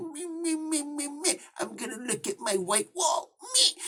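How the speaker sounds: high, soft whine, drawn out slowly. Dismissing a character he doesn't care about, doing a mocking wimpy Fisk impression. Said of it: "simpy wimpy little freaking Fisk".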